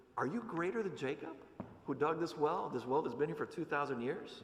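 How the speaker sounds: put-on, wry, skeptical, lightly sarcastic tone. Retelling how a woman answers Jesus at a well: retelling a sarcastic reply. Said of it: "responds with a little bit of sarcasm".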